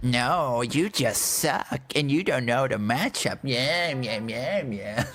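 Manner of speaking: dismissive, brushing-off know-it-all tone. Mocking League players after talking about matchups: impression of a Lee main. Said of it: "That's my impression of a Lee main".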